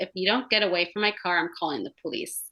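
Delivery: mock, totally flat, deadpan delivery. Retelling what a companion told a man rushing up to the car, retelling a deadpan warning. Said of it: "Like totally like deadpan".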